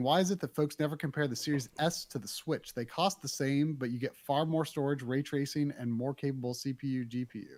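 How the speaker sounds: ordinary talk, nothing marked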